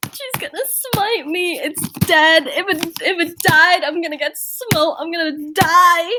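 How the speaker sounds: very high-pitched, tearful, terrified near-sobbing. Playing a character staring where the dove flew away: terrified, on the verge of tears. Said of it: "crying on the verge of tears".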